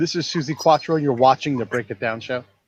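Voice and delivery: normal talking voice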